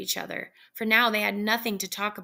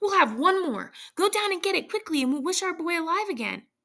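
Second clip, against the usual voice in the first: eager, high, fast, swooping excited outburst; 9 semitones higher than usual. Reading a story, the narrator voices the old woman answering her husband: crying out excitedly. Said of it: "said the old woman".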